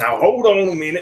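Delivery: put-on Southern accent. Joking along that the players are southern hicks: put-on southern accent. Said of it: "I've heard your Southern accent".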